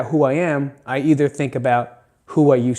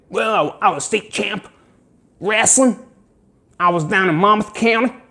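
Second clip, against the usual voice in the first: fake country accent, higher; 7 semitones higher than usual. Imitating a former state wrestling champ bragging: put-on country accent. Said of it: "Monmouth County has a country accent".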